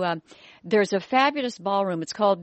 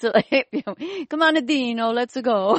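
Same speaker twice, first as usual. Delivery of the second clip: put-on older man voice, higher and slower; 4 semitones higher than usual. Remembering his barber grandfather, speaker shows how he talked: imitating grandfather Gitano Crocetti. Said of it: "He talked like this".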